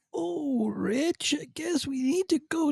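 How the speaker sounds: very high, soft cartoon voice, poorly done. Asked for initial thoughts on the episode, starting with a bad Pooh impression. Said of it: "that's my bad poo impression".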